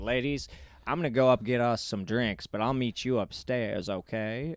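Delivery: suave, easygoing, smooth, cool charming voice. Retelling what Daryl told the ladies at the club: imitating a smooth, cool talker. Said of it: "he was so smooth, so cool".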